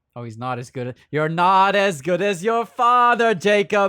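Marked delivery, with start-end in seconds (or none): 1.1-3.8 put-on loud, slow, heavy movie villain accent. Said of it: "this Mads Mikkelsen accent goes".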